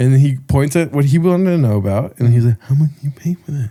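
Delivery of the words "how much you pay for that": soft, quietly spoken speech with a deaf sound. Retelling a deaf man pointing and asking again: imitating a deaf man's speech. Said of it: "I did a really good impression both times there".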